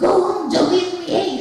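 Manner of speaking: put-on little boy voice. Retelling being tested on one line in different voices, young boy voice. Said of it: "Now do it as a boy".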